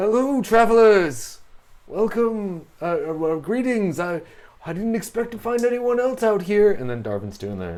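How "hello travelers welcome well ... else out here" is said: very high, very loud, booming, hesitant, drawn-out. Voicing a character who greets the travelers: NPC voice. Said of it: "He's like".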